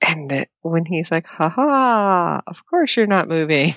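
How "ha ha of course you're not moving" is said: mock chuckling through the words, drawn-out ha. Retelling Harry's reply in the episode: imitating Harry laughing. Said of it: "The laughing, oh my God, that's killing me".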